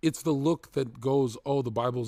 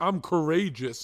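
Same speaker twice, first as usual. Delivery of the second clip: put-on scream, higher; 5 semitones higher than usual. Retelling how a streamer reacted: imitating someone screaming. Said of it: "he starts screaming".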